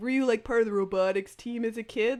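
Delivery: chill, cool surfer-dude nerd voice. Speaker interviewing a guest about his scientific journey, in a cool surfer nerd voice. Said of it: "it's a cool surfer, surfer nerd voice".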